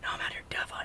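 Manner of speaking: breathy, hushed, very quiet whisper. Retelling answering a buddy's phone call while dove hunting: imitating own whisper. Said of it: "you ain't gotta whisper".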